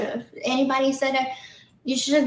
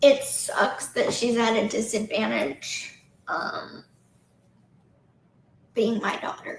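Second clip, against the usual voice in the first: choked-up voice, fighting back tears; 3 semitones lower, 3 dB quieter than usual. Talking about wanting to be a good mom to her daughter: choking up, holding back tears. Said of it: "I'm trying not to cry".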